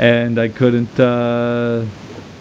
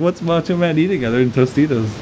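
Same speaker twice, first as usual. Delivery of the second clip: ordinary talk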